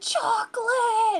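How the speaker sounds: put-on shrill, very high shrieking screech. Retelling what they and their manager scream: imitating a scream. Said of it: "will just start screaming".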